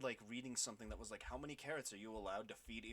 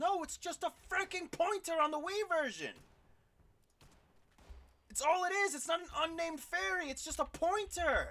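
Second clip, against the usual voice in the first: very high, shrill, very loud shouting; 12 dB louder than usual. Correcting a mistaken idea about a video game, yelling. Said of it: "Sorry, I'm yelling".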